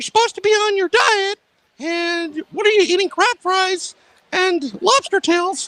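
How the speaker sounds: very high, squeaking cartoon voice. Speaker voicing what someone watching might think, Mickey Mouse voice. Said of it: "same thing as your Mickey Mouse voice".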